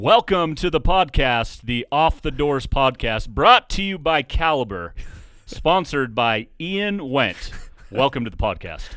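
loud, slick infomercial announcer pitchman voice. Asked by the host to welcome listeners, in an infomercial announcer voice. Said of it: "let everybody hear your amazing infomercial voice".

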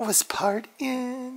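high-pitched whispered dog voice.

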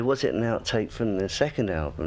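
ordinary talk

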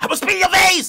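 put-on shrill, very high, loud New York accent. Mocking what such women say in the video: imitating a loud New York accent. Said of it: "That's what New York bitches be saying".

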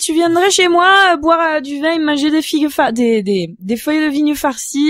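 southern French Marseille accent.

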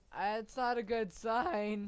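very loud, scared, terrified voice cracking. Player hearing a creepy horror-trailer theme in the game, terrified, voice cracking. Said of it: "As you can tell by that voice crack".

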